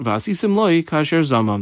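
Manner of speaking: normal talking voice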